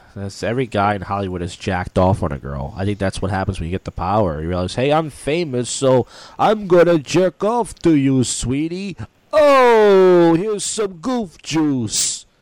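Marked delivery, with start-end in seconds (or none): 4.7-12.1 very high, slow, heavy drawl, drawn out.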